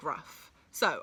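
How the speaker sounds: ordinary delivery, nothing marked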